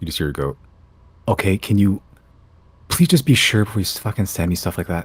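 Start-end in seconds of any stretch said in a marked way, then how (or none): 1.3-5.0 frantic, alarmed, very panicked pleading. Voicing Claudine answering an alarming message she was sent, panicked voice. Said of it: "in a very somewhat panicked voice".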